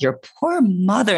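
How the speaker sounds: mock condescending pity. Retelling a step grandma's remark about carrying a big baby: imitating a pitying tone. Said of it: "shitty, pity kind of".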